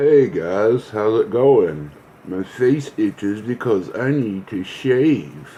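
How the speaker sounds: slow put-on baby talk, "shave" drawn out. Greeting viewers at the start of a video, talking like a baby. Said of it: "Why am I talking like a baby".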